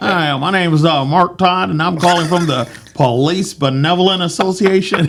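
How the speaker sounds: put-on disguised older country voice.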